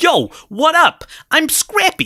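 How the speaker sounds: put-on very high, swooping, drawn-out New York accent. Imitating how the voice actor plays Scrappy in the film: Scrappy's New York accent. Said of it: "Caitlin Mayer, who voices it, is like".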